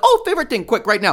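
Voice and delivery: very high, fast, put-on, sunny, cheerful burst. Acting out the quick segment intro that was planned: acting out a happy tone.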